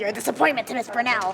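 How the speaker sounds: creepy, evil horror-movie doll voice. Asked by a friend to do the voice, a speaker talks like Chucky. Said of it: "You sound like Chucky".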